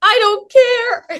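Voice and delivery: mock shrill outburst, very high, far too loud. Retelling own reply on meeting someone backstage: retelling saying it super loud. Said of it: "I said this super loud".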